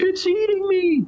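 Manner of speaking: weak, hoarse, exhausted, barely audible voice. Like someone worn to the bone, calling weakly out of the darkness, too drained to do more than rasp a few words to a stranger. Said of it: "the haggard, hard, scream, screaming voice replies".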